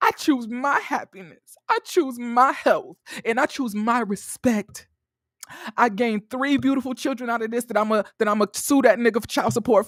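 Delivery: mock heartbroken voice. Reading a social media post aloud in a put-on hurt voice.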